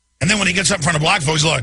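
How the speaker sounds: ordinary talk, nothing marked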